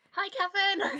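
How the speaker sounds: very loud, high, shrill screaming at full volume. A player's character spots someone peeking over a rock, very loud screamed greeting. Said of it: "Very loudly screams".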